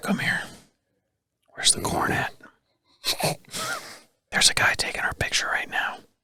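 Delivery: hushed, barely-there soft whispered voice-over. Voicing a buck in a photo whispering to a doe, whispering as a deer. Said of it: "the last time we ever whisper on camera".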